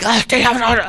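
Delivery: excited, delighted tone. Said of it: "and you were like".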